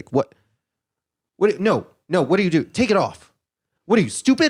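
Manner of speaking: put-on brash talk show host voice. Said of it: "And she's like".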